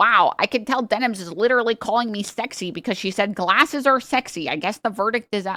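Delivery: mocking put-on voice. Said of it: "he's gonna watch and he's like".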